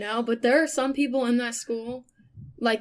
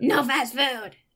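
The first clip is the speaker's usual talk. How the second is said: mean, unfriendly front desk lady voice. Retelling how the front desk lady refused fast food: imitating a mean front desk lady. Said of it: "That's exactly what they sound like".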